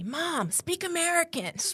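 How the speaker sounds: put-on very high child's yell. Retelling what her son yells at her: imitating son yelling. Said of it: "my son yells at me".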